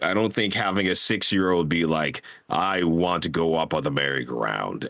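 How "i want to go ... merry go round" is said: ordinary talk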